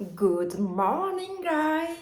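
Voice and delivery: bad put-on English accent, pitched high. Greeting the guys at the start of the day, in a bad English accent. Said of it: "J'ai vraiment un accent anglais pourri".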